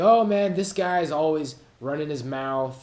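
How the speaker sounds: slick, loud, dismissive put-down tone.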